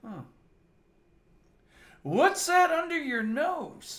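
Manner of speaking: play-acted drunk man voice, pitched very high. Retelling a drunk friend's question to a waitress: imitating a drunken voice. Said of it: "in his drunken haze and he goes".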